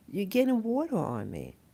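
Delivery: put-on feeble, very frail, very old woman's voice. Retelling what an elderly salon client said at the sink: imitating a frail ancient voice. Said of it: "in a very, very, um, ancient voice, you know, very frail voice".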